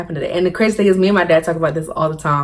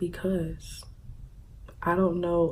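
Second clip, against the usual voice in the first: put-on sobbing, whispered; 15 dB quieter than usual. Retelling answering the principal about crying: imitating own sobbing. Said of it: "mind you, I'm sobbing".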